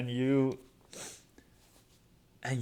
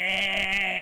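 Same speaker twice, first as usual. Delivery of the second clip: high, loud mock alarm-clock buzz. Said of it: "it sounds like".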